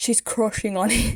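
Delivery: clichéd stock English accent. Retelling a scene, the speaker redoes a line in an accent: put-on English accent. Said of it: "I need to do the accent".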